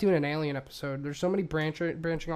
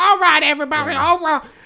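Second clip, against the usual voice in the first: put-on wise old woman voice, higher and louder; 12 semitones higher, 14 dB louder than usual. Mocking how Whoopi Goldberg talks like a wise old woman: Whoopi Goldberg impression. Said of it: "She's like".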